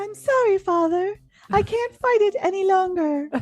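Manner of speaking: put-on crazy girl voice. Retelling a lip-reading game scene from a show: crazy girl voice. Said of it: "Sean takes on this crazy girl voice".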